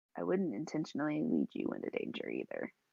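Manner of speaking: hushed, confiding stage whisper in character. Voicing a character who whispers reassurance to Harith: whispering in character. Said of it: "she whispers".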